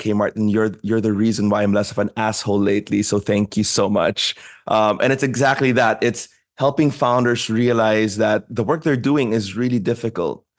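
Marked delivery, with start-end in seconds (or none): 0.0-4.3 quiet, under-the-breath aside. Retelling a founder's thanks during an office visit: imitating speaking under breath. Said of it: "under his breath".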